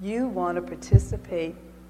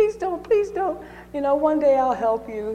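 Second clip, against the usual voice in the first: high, begging, pleading voice; 9 semitones higher, 5 dB louder than usual. Telling the fable, the narrator voices the mouse speaking to the lion, begging and pleading. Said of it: "the mouse begs and pleads".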